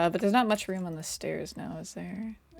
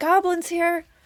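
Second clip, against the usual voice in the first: piercing, very high, very loud shrill yell; 11 semitones higher, 9 dB louder than usual. A character dashes into the next room, yelling out. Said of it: "she yells out".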